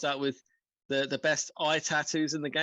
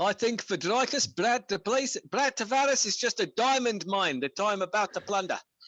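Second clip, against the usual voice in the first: put-on South African accent throughout, pitched up; 6 semitones higher than usual. Previewing an upcoming fight, in a put-on south african accent. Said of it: "but that South African accent, sir, flawless".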